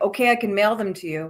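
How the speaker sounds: put-on old man's thick Quebec French accent. Retelling an eighty-nine-year-old man on the phone in Quebec, thick Quebecois accent. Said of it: "super thick accent".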